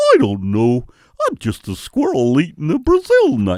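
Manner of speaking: idiotic-sounding voice. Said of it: "why do you talk like a fucking idiot?".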